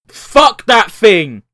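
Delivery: slow, loud, disgusted shout.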